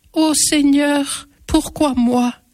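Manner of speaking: tiny, slight, high-pitched little voice. Narrator reads Antoinette's line on seeing the lit cross above the town: small little voice. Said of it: "dit de sa petite voix".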